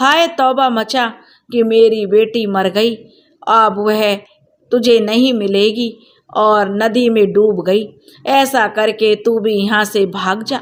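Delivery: plain reading voice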